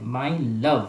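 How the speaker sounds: slight extra stress on love in my love. Explaining word stress with the example my love, stress on लव in माई लव. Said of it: "लव को थोड़ा सा stress दे रहे हैं ना, थोड़ा सा जोर देके बोल रहे हैं".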